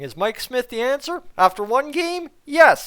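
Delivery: dry, sarcastic, tongue-in-cheek mock-serious tone. Talking goaltending stats in a hockey video, sarcastic. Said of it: "Am I being a little sarcastic right now?".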